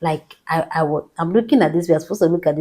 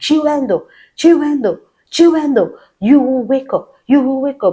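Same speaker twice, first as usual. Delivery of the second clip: mock high, insistent shouting, over and over; 8 semitones higher, 6 dB louder than usual. Speaker recounting their mom calling their name over the phone, retelling mom's shouting. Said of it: "My mom was just shouting".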